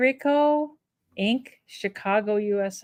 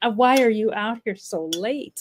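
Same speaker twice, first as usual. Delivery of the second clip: put-on pet voice with mock disgust. Voicing the pet Peanut woken up late: voicing Peanut, put-on disgusted. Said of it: "he's kind of disgusted".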